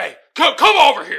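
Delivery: mock aggressive yelling. Acting out someone aggressively yelling at him: retelling an aggressive yell. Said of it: "why the hell are you yelling?".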